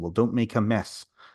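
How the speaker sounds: put-on strong Welsh man's accent. Retelling what a little Welsh man said to them down on the floor: strong Welsh accent. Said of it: "very strong accent".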